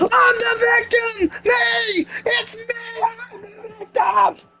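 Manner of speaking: very high, acted-out screaming. Mocking someone who avoided accountability, imitating her screaming. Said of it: "I'm just gonna do it".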